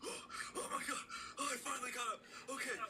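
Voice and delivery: very high, breathless, winded, gasping, panting. Voicing a servant sprinting in from a bush, out of breath. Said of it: "He can't catch his breath".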